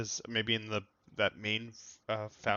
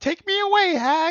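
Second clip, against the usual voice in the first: put-on very high, loud, slow, sweet, naive innocent child voice; 12 dB louder than usual. Showing another player how to sound like an innocent child: innocent child voice. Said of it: "try something like".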